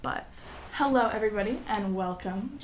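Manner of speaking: newscaster voice, news-anchor style delivery. Opening a podcast episode with a greeting, newscaster voice. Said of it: "That's my newscaster voice".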